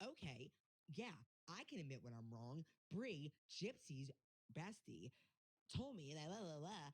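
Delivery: haughty, snobby, superior tone. Imitating how a rival talks when admitting she was wrong: imitating a snobby tone. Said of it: "she was so snobby about it".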